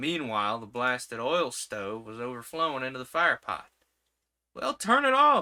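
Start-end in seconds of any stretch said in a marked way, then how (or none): 4.5-5.4 very high, very loud, shrill yell. The narrator yells instructions to her, yelling. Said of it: "I yelled".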